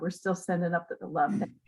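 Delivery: soft voice, welling up with tears. Ending a remembrance of Tom, who has died: welling up with tears. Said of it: "I'm welling up a little bit".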